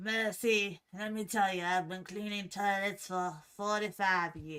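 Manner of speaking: rough, rasping, raspy voice. Retelling what a boss at the hotel said: imitating a boss with a raspy voice. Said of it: "my boss at the hotel talked like that".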